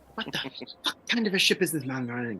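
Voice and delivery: scornful, close half-whispered aside. Playing a character in a role-play, half-whispering to another character. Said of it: "I'm I'm whispering this to Radigan".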